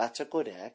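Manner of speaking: soft, hushed character voice, fully sustained. Asked to do it again, the speaker repeats the phrase: Littlefinger impression. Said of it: "This is Littlefinger from Game of Thrones saying".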